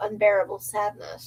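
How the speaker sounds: ordinary delivery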